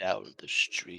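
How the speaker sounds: menacing, threatening acted voice. Answering a guard in character about where he is going: menacing in-character reply. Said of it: "putting it in the most menacing way possible".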